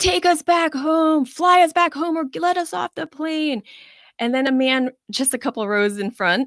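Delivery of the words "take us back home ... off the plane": very high, furious, angry yelling. On a plane, retelling a passenger's demand: imitating a man yelling. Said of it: "this man was yelling like".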